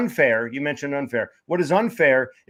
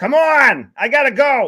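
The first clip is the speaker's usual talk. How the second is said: put-on loud, drawn-out Boston accent, very slow, very high; 10 semitones higher, 7 dB louder than usual. Retelling a man in line behind him: imitating a boston accent. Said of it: "some meathead with a Boston accent".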